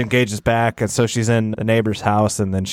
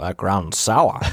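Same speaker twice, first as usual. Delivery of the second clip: put-on old man's voice. Doing the old guy's lines when asked for the impression: Fred Gwynne old guy impression. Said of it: "You always did an impression".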